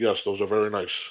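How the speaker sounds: flat, lifeless, machine-like, low robotic monotone. Imitating a wrestler's reply to his partner: imitating a robotic monotone. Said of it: "Like a robot".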